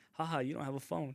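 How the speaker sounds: ordinary talk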